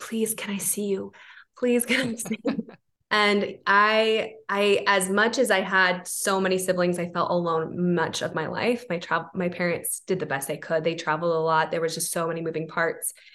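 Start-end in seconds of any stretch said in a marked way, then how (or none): 0.0-2.7 play-acted imploring, prayer-like, repeated begging. Recalling sitting in bed as a child asking to see God; retelling childhood begging.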